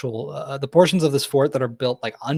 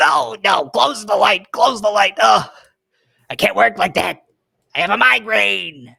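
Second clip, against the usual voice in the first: high, raised, rough little goblin voice; 8 semitones higher, 7 dB louder than usual. Telling a story, the speaker voices a little goblin that pops up: little goblin voice. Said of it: "a little goblin, and uh, he goes".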